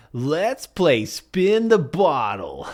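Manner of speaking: slight American accent. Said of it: "I kind of just blurred it a little bit".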